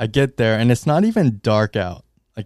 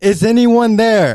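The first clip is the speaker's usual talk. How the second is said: very high, shrill, all-out full-lunged shout; 11 semitones higher, 5 dB louder than usual. Retelling calling out alone upstairs: imitating own shout. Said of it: "I shouted at the top of my lungs".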